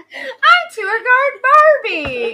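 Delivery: shrill, very high, loud, drawn-out belting. Mocking a voice found annoying: Barbie voice. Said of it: "the voice particularly annoying where she goes".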